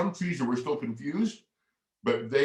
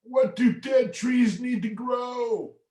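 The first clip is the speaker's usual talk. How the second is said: put-on very high, creaky old-tree character voice; 13 semitones higher, 3 dB louder than usual. Retelling asking a group of kids a question, in a creaky old dead tree voice. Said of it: "with my best dead tree voice".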